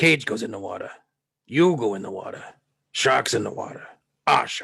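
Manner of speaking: put-on rough, creaky, raspy cranky old man voice. Acting out a favourite scene as promised: Quint impression. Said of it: "your impression".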